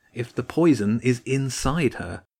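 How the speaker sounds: usual speaking voice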